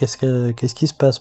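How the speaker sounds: ordinary delivery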